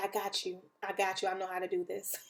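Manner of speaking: imitated whispering. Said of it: "we was whispering to ourselves".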